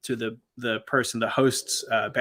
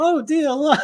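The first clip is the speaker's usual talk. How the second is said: very high, sugary, sweet Texas church-lady voice; 7 dB louder than usual. Retelling how a church lady reacted to the speaker's mom, super nice Texas church lady. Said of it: "this like super nice church Texas lady was like".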